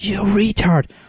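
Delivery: play-acted high-pitched angry yell. Retelling how a sister yelled at a driver who cut her off: imitating Tiffany yelling. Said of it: "and she yells".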